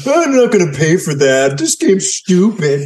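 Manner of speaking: put-on high, dismissive, bored teenager voice. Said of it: "That was a Lindsay impression".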